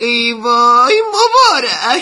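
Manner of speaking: loud, slow, panicked, anguished wail.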